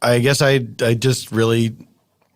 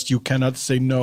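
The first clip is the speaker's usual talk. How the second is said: plain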